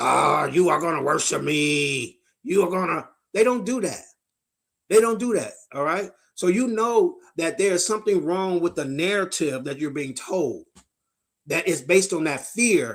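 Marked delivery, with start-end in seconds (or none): 0.0-3.1 menacing, threatening demonic voice, "me" drawn out. Illustrating babies threatening you, which they never do, in a demonic voice. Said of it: "threaten you with some demonic voice".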